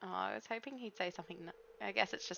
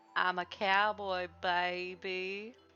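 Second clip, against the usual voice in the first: very slow, drawn-out, teasing and mocking delivery. Imitating the other speaker's old stream line: mocking imitation of the listener. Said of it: "You used to go".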